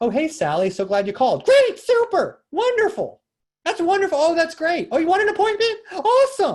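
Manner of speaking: overeager gushing, very high, very loud, rising pitch. Showing how a real estate agent answers a client's phone call, overexcited.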